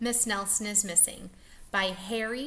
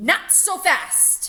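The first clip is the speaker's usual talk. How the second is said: very loud, unpleasant, nasty hissing voice; 4 semitones higher, 8 dB louder than usual. Narrator reading a story, a voice stops the unruly kids with a hissing unpleasant voice. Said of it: "hissed an unpleasant voice".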